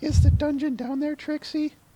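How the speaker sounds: very high, acted character voice. Reading a comic aloud with another speaker, voicing Sunset Shimmer: Sunset Shimmer voice. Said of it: "trying to remember Sunset Shimmer's voice".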